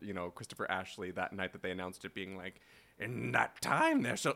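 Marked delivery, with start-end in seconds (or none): 3.0-4.3 storybook witch voice, proclaiming. Voicing a witch who appears with a prophecy: witch voice sounding like Yoda. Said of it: "why is my witch Yoda?".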